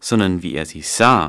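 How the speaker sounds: stress on SAH, falling at the end.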